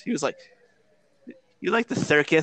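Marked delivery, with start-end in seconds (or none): 1.6-2.4 put-on lisp with higher pitch. Recalling a scene where Bruce speaks to Chase, Bruce's slight lisp. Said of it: "a little bit of a lisp when he said circus".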